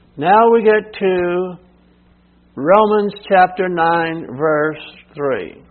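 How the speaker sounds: very slow, drawn-out, unhurried, deliberate reading. Moving on to the next Bible verse in a teaching, very slow. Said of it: "Why am I talking slowly?".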